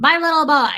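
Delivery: very loud, shrill, high-pitched, odd voice. Talking about a little boy to viewers: weird voice. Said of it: "Let that weird voice just be in your head".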